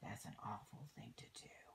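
fast, hushed, disapproving whisper.

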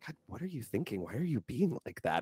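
quiet muttering under the breath. Voicing Kent reacting to a dude acting weird: Kent muttering under his breath. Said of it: "just sort of mutter that under his breath".

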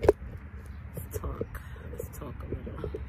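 soft, unvoiced whisper.

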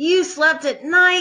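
gasped out. Reading another onlooker's line in the crowd, gasping. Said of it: "gasped another".

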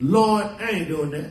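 ordinary delivery

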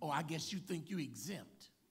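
put-on sarcastic, mocking tone. Retelling what others said when they questioned him: imitating a sarcastic remark. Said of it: "they wanted to get a little sarcastic".

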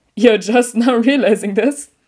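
speaking through laughter. Hizashi replies to Izuku with another laugh. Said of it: "With another laugh".

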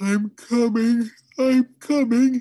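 drowsy, very drawn-out, very high wail. Father, just woken by battering on the attic door, calls out: slow, sleepy wail. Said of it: "he wailed in a slow, sleepy voice".

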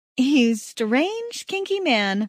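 spoken through a laugh. Narrator reads her own line to the man kissing her, with a laugh. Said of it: "I say with a laugh".

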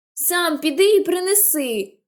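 said high and slow. The narrator, told by Jem to fetch the wheel, shouting back at him. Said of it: "крикнула я".

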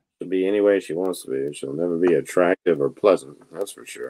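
very low, sidelong muttered aside. Muttering a remark about a woman to Dante, under the breath. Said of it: "I was trying to say that under my breath".

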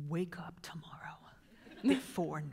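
hushed, quiet murmur. Retelling what you tell yourself every Sunday night, said quietly to oneself. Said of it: "I just say that quietly to myself".

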